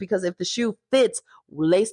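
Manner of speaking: ordinary talk, nothing marked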